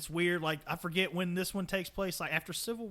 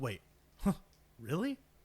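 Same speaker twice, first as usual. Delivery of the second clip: put-on surprised chuckle, lower pitch; 3 semitones lower than usual. Retelling how the narrator reacted while reading the script: imitating a surprised chuckling reply. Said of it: "just starts chuckling".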